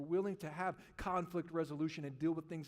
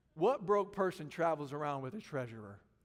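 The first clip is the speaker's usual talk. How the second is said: usual speaking voice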